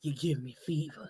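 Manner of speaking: very low, deep, sexy auntie voice. Teasing a friend about her line, imitating her sexy auntie voice. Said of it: "That's what she sound like she finna say, like an auntie".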